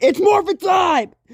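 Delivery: very high, really angry, furious shout. Retelling a scene where the hero confronts the impostor: mock really angry voice. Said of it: "he's really angry in a really angry voice".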